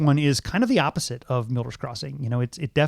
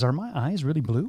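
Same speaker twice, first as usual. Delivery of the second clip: dry, sarcastic delivery. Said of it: "really sarcastically says".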